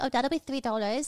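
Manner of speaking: put-on, fake British accent. Retelling what the ramen place staff said in LA, in a put-on British accent. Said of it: "Why are you speaking in British?".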